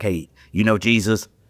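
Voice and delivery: blunt, rough, gruff male voice. Retelling how a deacon confronted people at their doors: imitating a rough deacon. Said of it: "he had this kinda rough demeanor".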